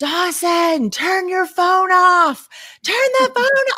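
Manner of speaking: put-on screaming. Parent retells calling downstairs to a son before school, retelling screaming downstairs. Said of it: "I'm like just screaming downstairs".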